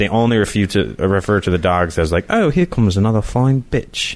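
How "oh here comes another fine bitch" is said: high, distant, mock British show voice. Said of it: "I usually say it in a, like, a British accent".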